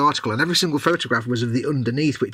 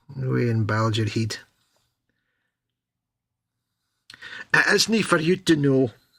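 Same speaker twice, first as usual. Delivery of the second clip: poorly done put-on Scottish accent. Saying a line, then apologising to viewers from scotland: bad scottish accent. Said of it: "I just completely butchered the Scottish accent".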